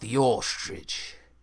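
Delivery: put-on Australian accent. Retelling a bit told to a crowd, answering with an Australian accent. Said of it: "So I did it in an Australian accent".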